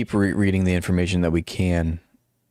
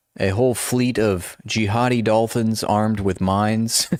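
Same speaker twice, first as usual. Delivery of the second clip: plain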